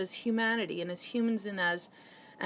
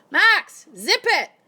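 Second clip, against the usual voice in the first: very loud, shrill, annoyed yell; 8 semitones higher, 12 dB louder than usual. Breaking off mid-talk to tell someone nearby to stop: yelling. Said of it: "I just yelled at him".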